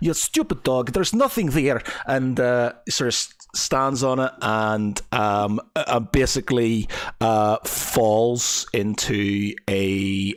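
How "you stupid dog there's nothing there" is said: put-on Russian-type accent, pitched high. Voicing a character from the east who curses a dog: Russian-ish accent. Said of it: "they're gonna have Russianish type accents".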